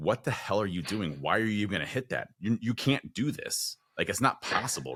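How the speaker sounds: doubting, self-doubting voice. Retelling the moment before a hard sprint: imitating own doubting mind. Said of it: "my mind said".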